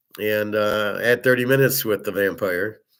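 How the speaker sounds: normal talking voice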